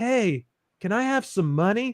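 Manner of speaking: put-on cartoon hippie character voice. Acting out a King of the Hill scene: King of the Hill hippie chick voice. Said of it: "The hippie chick".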